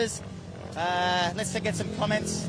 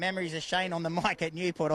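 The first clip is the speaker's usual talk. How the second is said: ordinary talk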